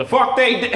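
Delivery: high, loud yell in Southern accent.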